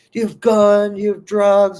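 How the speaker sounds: shrill, high, loud barked cop yell. Retelling how a cop pulled over a family: imitating a cop yelling. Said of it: "Cop's still just yelling at him".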